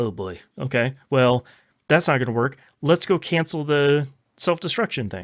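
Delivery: ordinary talk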